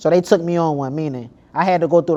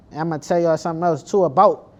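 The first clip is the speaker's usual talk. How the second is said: usual speaking voice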